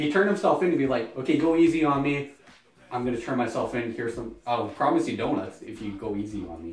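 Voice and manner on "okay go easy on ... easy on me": ordinary talk, nothing marked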